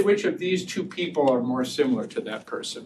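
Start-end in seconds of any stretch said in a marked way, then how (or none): none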